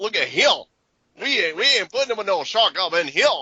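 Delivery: put-on odd, movie-style eccentric Louisiana accent. Speaker recalls an actor's movie line, imitating Louis Gossett Jr.'s Louisiana accent. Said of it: "he does that Louisiana accent".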